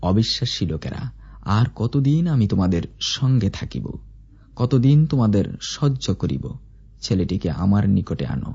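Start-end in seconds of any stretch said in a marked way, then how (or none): none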